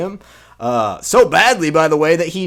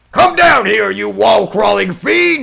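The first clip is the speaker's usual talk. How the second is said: mock frantic, rough, furious angry rant; 4 semitones higher, 4 dB louder than usual. Retelling a cartoon scene where Jameson starts flipping out: imitating Jameson flipping out. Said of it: "Jameson just starts flipping out even more".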